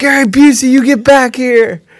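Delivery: very high, shrill screaming shout. Retelling the moment the car drove by, retelling a scream. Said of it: "And Olivia's screaming".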